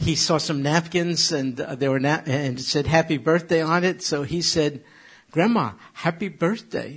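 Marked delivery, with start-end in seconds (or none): 5.3-7.0 put-on small two-year-old's way of talking. Telling a family story, the speaker quotes Sam at two, imitating Sam's two-year-old voice. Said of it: "in his two-year-old voice".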